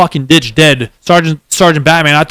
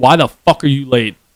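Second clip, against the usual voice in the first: put-on angry voice, emphatic, not screaming; 3 semitones lower, 3 dB quieter than usual. Retelling what was said to someone who showed up late, retelling an angry scolding. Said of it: "I put enough emphasis on it to where he knew I was like mad".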